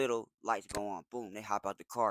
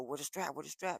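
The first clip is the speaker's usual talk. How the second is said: demanding, sharp, high call, held back; 5 semitones higher, 6 dB quieter than usual. Retelling a car chase, asking a passenger for the strap: imitating his own past yelling. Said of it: "and I'm yelling".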